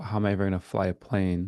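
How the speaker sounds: ordinary talk, nothing marked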